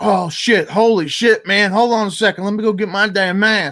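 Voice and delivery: mock flustered man, high, sudden panicked outburst. Retelling how a maskless guy came outside, imitating a panicked man. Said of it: "He ran to his truck like in a panic".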